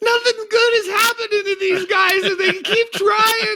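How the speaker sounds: very high, weepy, tearful voice. Retelling how she complained, halfway through the film, imitating someone crying. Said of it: "she's in tears".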